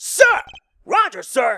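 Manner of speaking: worked-up, loud, high-pitched shout. An officer replies after being asked to lower his voice: loud shouting. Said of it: "His voice is gonna kill me".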